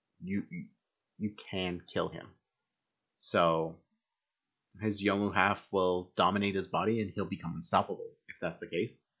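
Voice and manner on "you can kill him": mock, soft, flat, blank, matter-of-fact deadpan. Recapping a story where one character flatly suggests a killing, imitating a deadpan delivery. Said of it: "She's just like deadpan".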